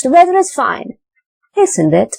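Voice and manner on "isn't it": falling tone on isn't it. Intonation lesson on tag questions: falling tone on isn't it. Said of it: "Isn't it is in the falling tone".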